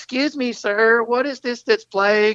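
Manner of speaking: put-on high, polite kid voice. Speaker recalls a kid asking a record store clerk, imitating a 12-year-old kid. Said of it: "this 12-year-old kid comes up and goes".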